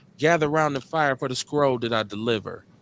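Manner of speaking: ordinary talk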